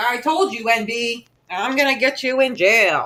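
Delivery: slow, dead-serious, solemn delivery, acted out. Retelling how someone with a channel warned the speaker, imitating someone all serious. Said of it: "Like all serious, like pointing".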